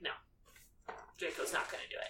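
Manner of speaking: low, whispered character voice. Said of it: "Snape comes up and he's like".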